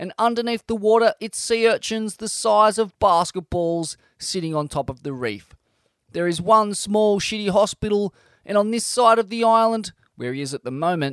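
plain reading voice

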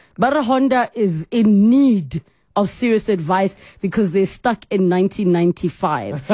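ordinary talk

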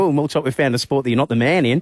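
normal talking voice

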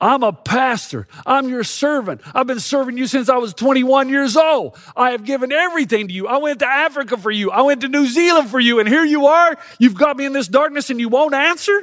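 angry, venting outburst full of fury. Retelling own words to God from the couch: retelling an angry outburst. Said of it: "And I let God have it".

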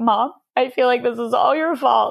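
sobbed out through tears, high and crying. Retelling a phone call to a mom: imitating own crying speech. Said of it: "through my crying".

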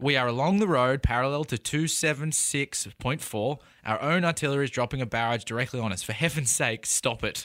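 normal talking voice

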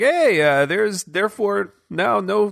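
put-on high, slow Canadian accent voice.

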